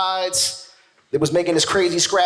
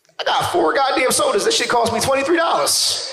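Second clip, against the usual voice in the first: plain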